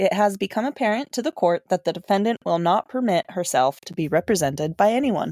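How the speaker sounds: normal talking voice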